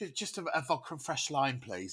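very quiet, hushed, low-key. Retelling how a tour partner ordered a drink after gigs: imitating a quiet order. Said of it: "He'd quietly order a".

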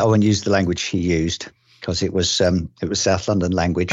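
ordinary talk

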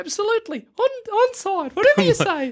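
very high, terrified, frightened character voice. Voicing a captive who was just slammed into glass: terrified NPC voice. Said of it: "he's fucking terrified".

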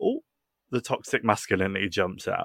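normal talking voice

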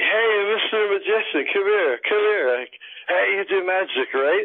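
put-on drunk man voice, very high-pitched. Retelling how a drunk guy calls the magician over: imitating a drunk guy. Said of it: "and he's drunk".

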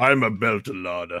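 deep, almost growling voice. Correcting another person's take on how she talks, deep growly voice. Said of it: "She's like".

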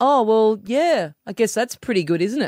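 sweetly passive-aggressive, grudging tone. Retelling what a classmate said about a weekend party: imitating a passive-aggressive tone. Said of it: "in that really passive-aggressive way".

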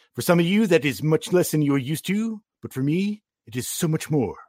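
put-on comic book fan voice. Quoting what a comic book guy would say, in comic book guy voice. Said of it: "As a comic book guy would say later".

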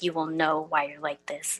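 put-on grandma voice, quiet, dark and ominous. Recalling the grandma who disciplined them, the speaker imitates her ominous warning. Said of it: "she said it like really ominously".

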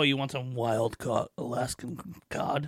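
slow, put-on TV commercial announcer delivery. Imitating how Wendy's advertises, in a commercial announcer voice. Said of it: "That was my commercial guy voice".

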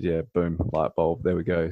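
ordinary talk

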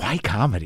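dead-serious, very earnest, sincere tone. Retelling a journalist's question after a comedy set: imitating someone asking earnestly. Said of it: "very earnestly said".

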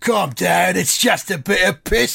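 put-on full-on, strong Cockney accent. Retelling a man's reply to a complaint: Ray Winstone Cockney voice. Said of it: "in full Ray Winston Cockney".

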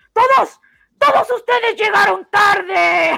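very high, very loud, shrill, stern scolding tone. Retelling how a school official scolded late students: imitating a scolding teacher. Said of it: "ella estaba así diciéndonos".

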